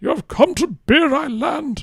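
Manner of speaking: put-on high wise old wizard voice. Offering to play a wise old man, the speaker does a Gandalf voice. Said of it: "I could do the Gandalf".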